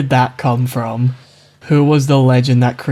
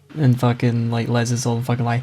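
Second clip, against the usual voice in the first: usual speaking voice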